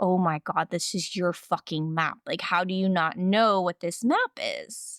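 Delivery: mock exasperated, fed-up, snapping outburst. Retelling a confusing talk with a ranger about a map: retelling exasperated outburst. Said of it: "about to lose my shit here".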